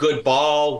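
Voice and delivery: normal talking voice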